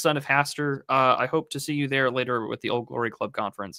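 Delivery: ordinary delivery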